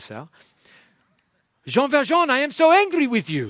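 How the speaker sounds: very high, swooping, put-on French accent. Retelling what the minister says in the story, in a put-on French accent. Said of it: "he says in a nice French accent".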